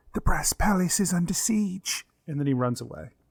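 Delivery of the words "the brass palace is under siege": cupped-hands whisper at a higher pitch. A character cups his hands around his mouth to tell you something, hands-cupped whisper. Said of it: "he puts his hands on around his mouth to whisper to you".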